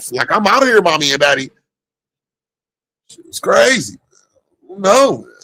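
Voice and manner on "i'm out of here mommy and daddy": put-on voice of a young teenage girl. Imitating a sixteen-year-old girl leaving her parents: imitating a teenage girl. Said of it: "They jumped in that old man's lap".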